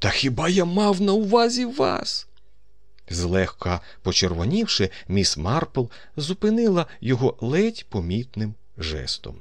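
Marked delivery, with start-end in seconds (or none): 0.0-2.3 very high-pitched, aghast, horrified cry. A colonel exclaims to a woman, horrified. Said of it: "вигукнув полковник із жахом у голосі".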